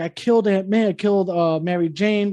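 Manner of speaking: put-on crying. Retelling a comic scene where Spider-Man cries after eating people: retelling a character crying. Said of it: "he starts crying, like".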